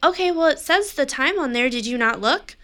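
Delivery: play-acted sharp, snotty, curt tone. Retelling arguing with someone who ignored the reminder: imitating own snippy tone. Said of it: "I continue to be shitty".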